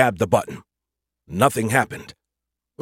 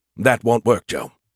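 usual speaking voice

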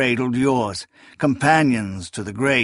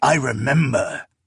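hissing, sibilant voice; 2 semitones higher than usual. Narrator reading the cloaked figure's words to Kellis, hissed. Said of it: "He looked up at Kellis and hissed".

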